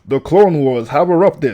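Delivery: narrator voice. Reading an intro as an impression of the narrator: narrator voice impression. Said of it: "I'm gonna try my best impression of the narrator's voice".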